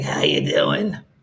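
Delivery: woman smoker's breathy, raspy voice. Voicing the dog Lulu as a lady who has smoked all her life. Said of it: "Lulu sounds like a lady who has smoked all of her life".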